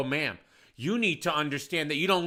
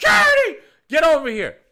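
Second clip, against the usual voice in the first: very loud, very high, shrill, swooping scream; 11 semitones higher, 10 dB louder than usual. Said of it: "watching me scream at a woman".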